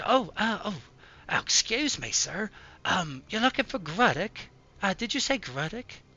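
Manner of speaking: poor starving woman voice. Voicing a ragged, malnourished woman who looks up at a stranger: malnourished ragged woman. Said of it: "she looks up, she".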